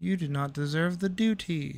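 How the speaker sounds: soft, slow, drawn-out tiny creature voice. Performing a line for a character: little creature voice. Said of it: "my ability to do little little creature voices".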